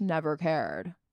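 utterly deadpan, unbothered delivery, pitched low. Trying out an impression you are working on, do a deadpan Aubrey Plaza impression. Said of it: "That's the impression I'm working on".

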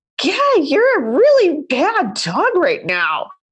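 fake-nice voice while seething. Scolding the misbehaving dog while seething inside, in a nice voice. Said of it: "I tell him what a bleep head he's being in a nice voice".

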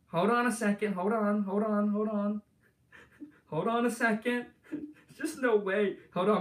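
shaky, jittery, nervous, trembling voice. Before making calls, the speaker asks everyone to hold on, shaking and nervous. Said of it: "I'm shaking right now. I'm nervous".

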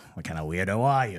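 put-on Cajun accent. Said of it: "What are these accents?".

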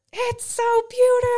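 very high-pitched, very loud scream. Retelling a girl coming up over the rise: imitating someone screaming. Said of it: "she just screams out".

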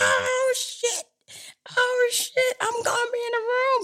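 very high, tearful crying outburst. Retelling getting the call to be in the room, reenacting own crying. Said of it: "I just started crying".

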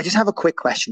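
put-on composed, calm, matter-of-fact, straight-faced delivery. Retelling a kid's question asked with a straight face: imitating a calm, straight-faced question. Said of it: "with such a straight face".

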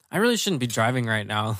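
ordinary talk, nothing marked

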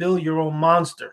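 normal talking voice

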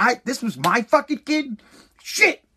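put-on slow, contemptuous, scornful, disdainful voice. Retelling how a father greeted his kid: imitating father's disdain. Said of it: "my father looked at me with, like, disdain".

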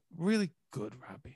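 very soft, slow, hushed half-whisper. Speaker demonstrating his trick when asked about doing shows, Don Draper slow half-whisper. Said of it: "I kind of whisper".

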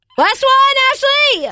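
high-pitched, loud yell.

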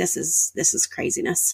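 hushed, disbelieving aside.

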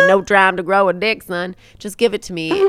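put-on loud, kind-of Southern accent. Retelling a story and acting out a quoted line in a kind of Southern accent. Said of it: "I want that to be like kind of like Southern".

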